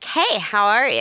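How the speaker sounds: put-on American-accented speech. Retelling the greeting the staff all said at work: American accent. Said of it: "we just all say it in an American accent".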